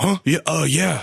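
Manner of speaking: mock words half grunted, rough, groaning, pained. Retelling a man in pain answering through a window, imitating grunting and groaning. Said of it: "almost grunting and groaning, like, his words".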